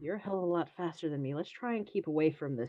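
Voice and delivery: soft whispering voice. Voicing a character who whispers to a companion: whispering. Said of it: "whisper to Mika".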